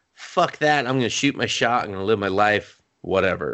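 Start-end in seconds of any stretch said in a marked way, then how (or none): none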